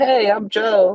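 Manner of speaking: put-on very high teenager voice. Teasing the other speaker about his old voice; imitating Joe as a prepubescent teenager. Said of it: "You sound like a prepubescent teenager".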